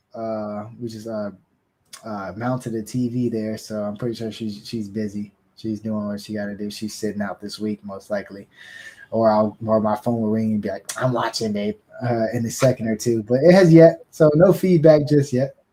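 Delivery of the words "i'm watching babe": put-on New York accent. Imitating a wife phoning to say she's watching: imitating wife's new york accent. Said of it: "that's a bold voice to use for her".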